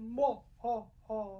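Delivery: very low-pitched character voice. Demonstrating possible voices for a peacock character: very low peacock voice. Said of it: "Does my peacock have a very low voice?".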